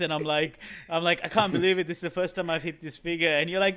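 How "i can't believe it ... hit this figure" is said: normal talking voice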